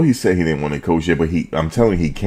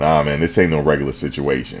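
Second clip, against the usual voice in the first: ordinary talk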